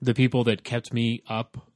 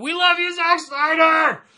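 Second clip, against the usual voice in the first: mock held-back scream, very high and drawn out; 6 dB louder than usual. Repeating a man's outburst without screaming into the microphone, imitating a scream, held back. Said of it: "He just screamed out".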